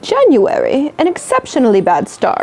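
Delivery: exceptionally bad put-on British accent, sing-song. Reading an entry from a list aloud: bad put-on British accent. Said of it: "I feel like I should read this in a British accent".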